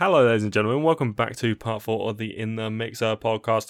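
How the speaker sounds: full robotic, machine-like voice. Opening a podcast episode with a welcome to listeners: full robot voice. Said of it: "I just went full robot".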